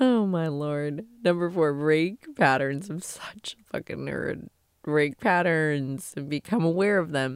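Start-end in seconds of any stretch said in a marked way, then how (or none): 0.0-4.5 tearful, crying through the words. Speaker telling listeners what to do this year, apologizing for crying; crying while talking. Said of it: "Sorry for crying".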